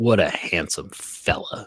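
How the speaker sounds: mock sarcastic delivery. Retelling a former coworker's compliment: imitating a sarcastic tone. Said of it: "in the most sarcastic asshole tone".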